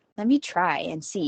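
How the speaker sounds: plain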